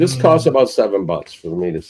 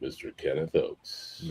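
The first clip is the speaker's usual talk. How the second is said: whisper in an on-air radio DJ style; 6 semitones lower, 20 dB quieter than usual. Doing a mock radio introduction for a guest, in the Radio [name] voice. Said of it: "That's my Radio [name] voice".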